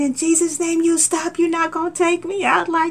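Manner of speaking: re-enacted scream. Retelling what she screamed while her kids listened on the phone, retelling a scream. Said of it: "And and so I was just screaming".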